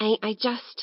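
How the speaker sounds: husky, hoarse, rough rasp. Reading a story aloud, a hungry street child answers: hoarse voice. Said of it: "she said in a hoarse voice".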